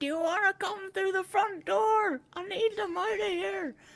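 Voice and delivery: mock shrill shouting, very high-pitched yell. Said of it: "yelling back".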